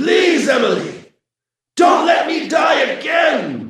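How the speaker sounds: very high, grating, rough mechanical robotic rasp. Narrator voices a figure reaching toward Emily: rough mechanical rasp. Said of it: "The figure rasped in a rough mechanical voice".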